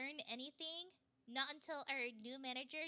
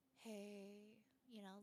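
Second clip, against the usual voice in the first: mock worn-out, defeated, low, quiet drained voice; 5 semitones lower, 9 dB quieter than usual. Describing how she sounded unlike her usual energetic self, imitating a drained voice. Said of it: "just kind of like very drained".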